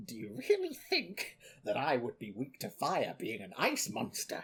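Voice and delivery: creepy ice-monster voice with swinging, swooping pitch. A game master voices an ice monster answering the players' fire attack, Yukijiji ice monster voice. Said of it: "He is the old man of the snow. / He is the old man of the snow. You asked him if he was going to attack you, and he said, probs not, but in a very creepy way. / He is the old man of the snow. / He is".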